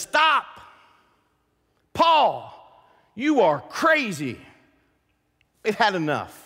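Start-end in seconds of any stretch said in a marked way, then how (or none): 0.0-4.4 mild exclamation, called out like a call-out. Retelling a scene from Acts 26 to listeners, the speaker is retelling a loud call-out. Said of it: "Festus calls out with a loud voice and says".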